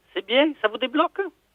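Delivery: put-on falsetto woman's voice.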